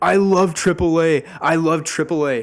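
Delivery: high, loud shouting, repeated. Retelling what he kept shouting across the table at a two-year-old's party: imitating someone shouting. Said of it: "he's just shouting like".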